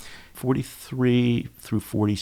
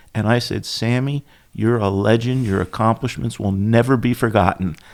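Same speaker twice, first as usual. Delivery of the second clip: usual speaking voice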